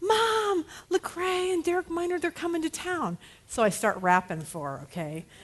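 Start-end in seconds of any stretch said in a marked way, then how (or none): 0.0-3.2 high, play-acted, all-excited, eager voice. Retelling a phone call from Cheyenne: imitating Cheyenne all excited. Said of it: "all excited".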